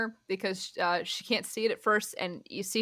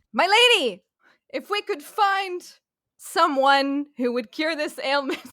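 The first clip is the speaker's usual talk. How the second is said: loud, raised, high voice, projected as if far off; 6 semitones higher, 8 dB louder than usual. Sherilyn addresses Inara as if Inara cannot hear her: Sherilyn's raised, loud voice. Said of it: "her voice is elevated as if you can't hear her".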